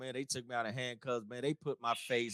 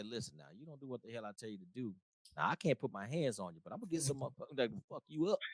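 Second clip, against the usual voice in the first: soft, low, menacing, threatening voice; 7 dB quieter than usual. Retelling what was said in a soldier's ear: retelling a quiet threat in the ear. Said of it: "I didn't have to scream".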